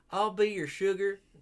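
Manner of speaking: put-on Southern-accented character voice. Voicing the new character Yumi, meant to be a Valley Girl: Yumi in a Southern accent. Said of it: "That was Southern voice".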